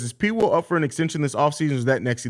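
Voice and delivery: ordinary talk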